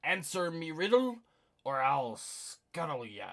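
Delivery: thundering, booming pirate bellow, very loud. Narrator voicing a mannequin at a pirate ship's prow: booming pirate voice. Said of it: "Its voice booms".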